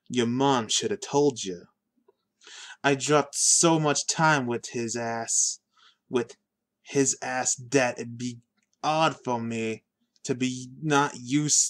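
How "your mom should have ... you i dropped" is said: usual speaking voice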